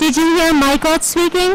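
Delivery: teacher voice.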